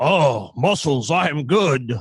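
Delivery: very slow, plodding, dim, simple caveman voice, drawn out. Describing a movie character who becomes a caveman: Arnold voice. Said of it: "like, an Arnold on a fucking fantasy planet".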